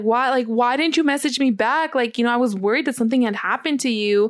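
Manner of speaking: teary, weepy, tearful crying voice. Retelling asking him why he didn't message back: imitating own past crying. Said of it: "I was literally in tears".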